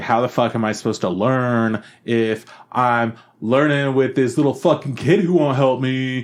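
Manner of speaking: play-acted angry, pissed-off griping. Retelling how a show character complained: imitating a pissed-off complaint. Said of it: "she was all pissed and threw a big old complaint".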